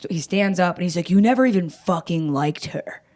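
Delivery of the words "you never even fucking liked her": acted, fed-up, frustrated, pissed-off angry outburst. Retelling what he said as he stood up: imitating someone frustrated and angry. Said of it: "frustrated and pissed off".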